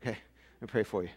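winded, breathless, quick and soft. Starting to pray for listeners after preaching, out of breath. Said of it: "I'm totally out of breath".

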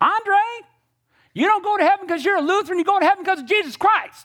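put-on very high, sweet little grandma voice. Retelling a family story, the speaker quotes Granny answering Grandpa, imitating Granny's sweet little voice. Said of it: "this sweet little voice, she goes".

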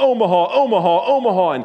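loud, high-pitched yelled call. Speaker reminding listeners of a quarterback's pre-snap calls, retelling a yell. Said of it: "He's yelling".

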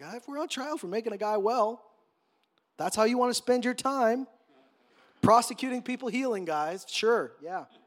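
dry, mocking, sarcastic tone. Paraphrasing Peter's answer to the rulers on trial: imitating Peter's sarcasm. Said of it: "there's a little sarcasm there".

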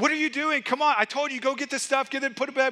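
put-on frustrated yelling, high. A parent recounts coming home to find things not put away, retelling yelling at kids. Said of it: "I'm there yelling at my kids".

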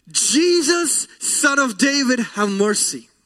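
acted pleading scream. Retelling a blind man calling out to jesus: acted scream for mercy. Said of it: "Blind Bartimaeus screams".

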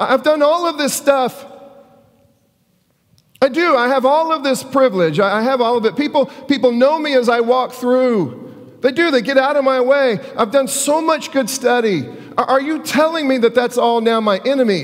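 put-on anguished pleading. Voicing Nicodemus answering Jesus about being born again: put-on anguish. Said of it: "you can almost hear it in his voice".

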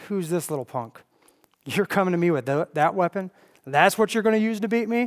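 acted-out mockery. Retelling how a huge man of war taunts a teenager, retelling a mocking taunt. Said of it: "he mocks him".

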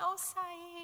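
soft, high, meek, sweet voice, laughing. Retelling how a boy's mother laughs off his yelling, imitating a sweet meek lady. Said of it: "She's this sweet little meek lady, and she'll just laugh and say".

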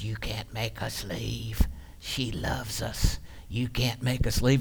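woman's put-on slow, hushed man's voice. Retelling what a woman said while she was held, imitating a man's voice. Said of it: "she was speaking in a man's voice".

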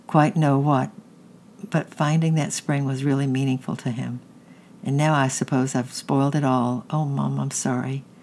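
ordinary delivery

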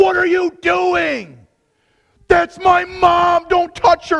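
put-on sudden shrill scream, very high-pitched. Retelling how the instructor burst out at the speaker during their turn: retelling a scream. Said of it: "just burst out and just screamed at me".

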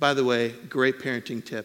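ordinary delivery

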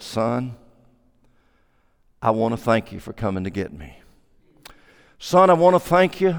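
mock low, quavering, trembling voice full of tears. Retelling the words of a big old man, imitating a trembling voice. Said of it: "with a trembling voice".

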